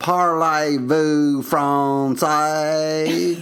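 mock teacher, southern French accent. Recalling high school french class: impression of the speaker's southern french teacher. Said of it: "here's my impression of my French teacher".

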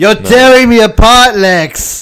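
very loud, high-pitched, belted-out delivery. Joking about a picture of Tommy Wiseau as Superman: Tommy Wiseau impression. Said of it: "Is this Tommy Wiseau as Superman?".

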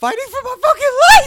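super high-pitched, booming, swooping voice, very loud. Retelling what a man said in an interview: imitating a very high voice. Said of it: "his voice gets so high".

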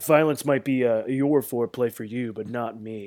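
ordinary delivery

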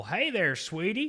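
high, overfamiliar, obnoxious schmoozing sweet-talk. Retelling what a customer said to a woman: imitating an obnoxious customer. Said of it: "it was just fucking obnoxious".

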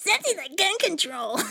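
very high, squeaky reading-aloud voice. Showing how they read aloud, unlike their brother's lower version: squeaky reading voice. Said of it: "mine is more, like, squeaky".

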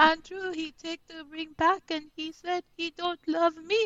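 put-on high, flat French accent. Imitating Amira telling Andrew about the ring: imitating Amira's flat, sad French accent. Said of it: "the French accent on top of it".

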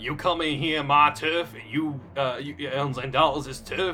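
put-on husky Southern woman's accent. Voicing a female character as requested, husky southern woman voice. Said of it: "I really want her to sound like a husky southern woman".

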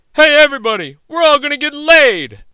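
loud, high-pitched shout. Retelling the last line of Caddyshack: Rodney Dangerfield impression. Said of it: "they're both Rodney Dangerfield".

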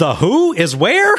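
thoroughly exasperated tone, high-pitched and drawn-out. Retelling a line someone said during earlier footage, retelling an exasperated line. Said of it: "Just in this exasperated tone".

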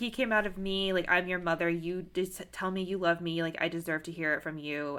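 ordinary talk

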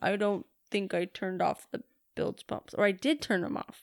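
put-on manly voice, breathy and half-whispered. Retelling what the other speaker said about the boat, imitating a manly voice. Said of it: "I'm like all manly right now and saying".

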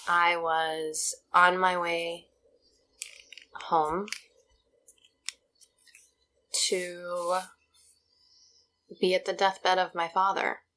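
close to crying, voice near tears. Recalling a painful family anniversary to a listener, about to cry. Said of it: "I'm going to cry".

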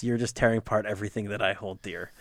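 ordinary delivery

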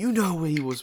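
super intense, forceful voice.

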